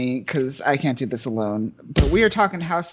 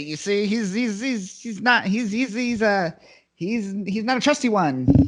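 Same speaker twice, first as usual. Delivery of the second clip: put-on slow, halting old-timey 1920s-style voice; 7 semitones higher than usual. Urged to quote someone in a twenties voice, old-timey 1920s voice. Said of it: "you gotta do it in like that twenties voice".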